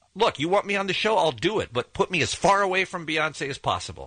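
ordinary talk

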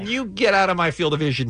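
ordinary talk, nothing marked

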